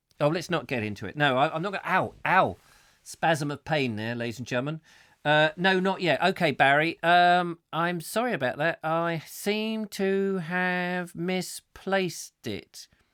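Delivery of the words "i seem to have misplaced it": very slow, deliberate, drawn-out delivery. Apologizing to Barry in front of an audience, in a very slow voice. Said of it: "He says in a very slow voice".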